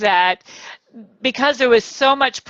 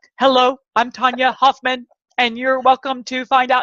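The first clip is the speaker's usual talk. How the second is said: flat, mechanical, robot-like monotone. Recalling their very first video, the speaker imitates their old intro, sounding like a robot. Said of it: "I sounded like a robot".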